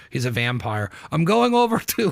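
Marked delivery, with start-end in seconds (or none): 1.1-2.1 bad, horrible put-on Sicilian accent, pitched up. Imitating a friend who offers to go out: imitating a Sicilian accent. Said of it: "That's my, uh, Sicilian accent".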